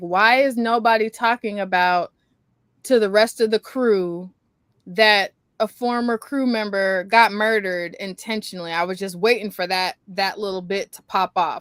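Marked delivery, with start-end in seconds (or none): none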